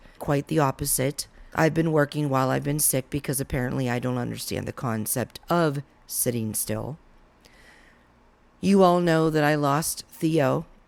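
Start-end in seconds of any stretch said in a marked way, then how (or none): none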